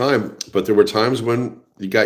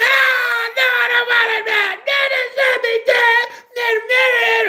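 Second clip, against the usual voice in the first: put-on, very high child yelling, it stretched. Retelling a small child at a store, imitating a kid yelling. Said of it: "yelling at their parent".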